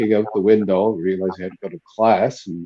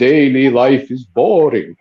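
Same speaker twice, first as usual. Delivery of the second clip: put-on thick, laid-on Hungarian accent, raised pitch; 4 semitones higher, 5 dB louder than usual. Quoting his hungarian spiritual director from the seminary, in a heavy hungarian accent. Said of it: "He had a very deep Hungarian accent".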